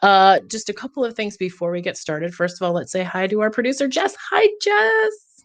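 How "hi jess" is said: put-on forced, very high, girly middle-school girl voice. Host greeting producer jess before the show starts, in a middle school girl voice. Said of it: "I did that middle school girl voice".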